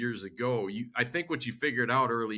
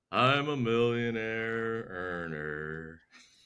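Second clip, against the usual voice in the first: very slow, drawn-out, dreary, gloomy drone. Showing how not to say the line: gloomy Eeyore voice. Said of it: "don't do it like Eeyore".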